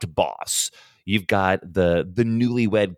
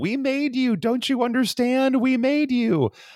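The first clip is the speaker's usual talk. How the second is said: mock high-pitched, insistent, repeated shrieking scream. Retelling a woman who goes outside and keeps repeating herself; retelling someone screaming. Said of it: "just starts screaming".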